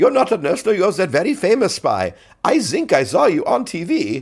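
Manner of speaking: put-on German accent, high and swooping. Quoting the doctor who recognizes the spy, with a german accent. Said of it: "this time with like a German accent".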